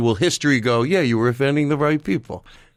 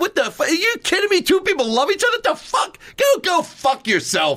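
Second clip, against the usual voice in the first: put-on furious angry rant, voice pitched very high. Retelling the other speaker's comedy bit about interracial marriage: imitating an angry rant. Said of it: "a bit where you're angry in it".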